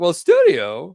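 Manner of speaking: very loud, belted, high-pitched character voice. Talking live late at night, slipping into a Christopher Walken voice. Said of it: "turning into Christopher Walken voice".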